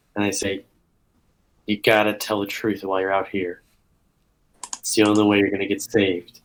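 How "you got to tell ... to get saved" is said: whispered character voice, lower and quieter. Whispering to the kid in character before facing a crowd: whispering in character. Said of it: "I go over and whisper to the kid".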